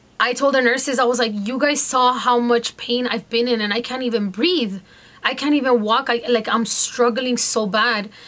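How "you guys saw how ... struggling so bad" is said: ordinary talk, nothing marked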